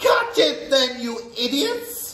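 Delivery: shrill, very high screeching scream. A witch screams down from a platform at the others: screamed. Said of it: "screamed the Grand High Witch".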